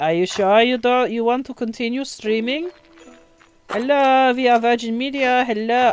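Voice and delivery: odd, weird, fake German accent. Complaining the stream stops, voicing Virgin Media in a weird German accent. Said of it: "it's like a weird German accent".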